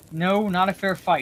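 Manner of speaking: ordinary delivery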